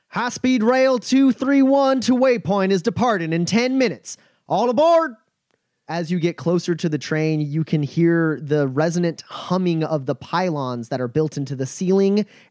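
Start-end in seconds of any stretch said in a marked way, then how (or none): 0.1-5.1 high-pitched, carrying shouted call. Voicing a train conductor who leans out and calls departure: conductor shouting. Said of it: "leans out the locomotive and shouts".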